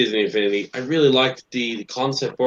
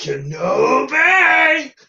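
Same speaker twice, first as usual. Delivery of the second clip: put-on monster voice; 13 semitones higher than usual. Repeating the other speaker's quoted shout: Cookie Monster-like voice. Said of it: "it might sound like Cookie Monster".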